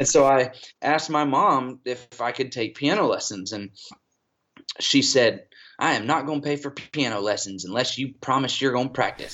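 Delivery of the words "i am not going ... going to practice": teasing, sassy Southern woman voice. The speaker retells mom's answer to a request for lessons, imitating sassy Southern mom. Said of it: "she's this little sassy Southern woman".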